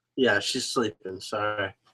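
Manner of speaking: usual speaking voice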